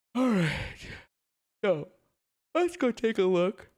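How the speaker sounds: words stretched by yawn. Moving on to take a look at the next thing, yawning while talking. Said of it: "I keep yawning".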